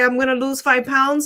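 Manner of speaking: ordinary talk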